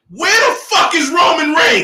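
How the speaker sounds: very high, very loud, shrill swooping yell. Complaining that a wrestler is missing from a ranked list: yelling. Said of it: "and now I'm gonna yell".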